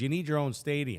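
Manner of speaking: normal talking voice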